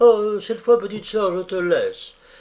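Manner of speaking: easy-going and light. César speaks to Gisèle as she comes back: casual, offhand. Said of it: "fit d'un air dégagé".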